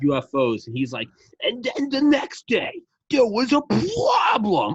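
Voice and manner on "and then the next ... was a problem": put-on slightly drunk, very high, swooping sing-song. Imitating the worst audiobook narrator: mix of Gilbert Gottfried and Elmer Fudd, slightly drunk. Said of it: "sounds like a mix between Gilbert Godfrey and Elmer Fudd".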